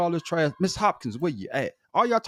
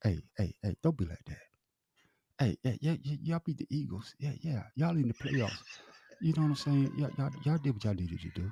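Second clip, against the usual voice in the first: close, hushed half-whisper right at the ear; 4 semitones lower, 9 dB quieter than usual. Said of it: "let me whisper something to your ear".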